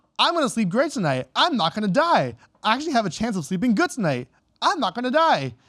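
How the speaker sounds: heavy, laid-on sarcasm with swooping sing-song. Quoting the book character's daily log reports: retelling a sarcastic log entry. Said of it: "it's so sarcastic".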